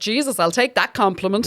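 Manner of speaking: normal talking voice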